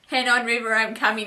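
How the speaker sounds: ordinary delivery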